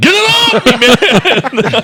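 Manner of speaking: mock very high, very slow, drawn-out scream. Imitating a man in a video with a squirrel on him: imitating someone yelling. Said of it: "he's just yelling".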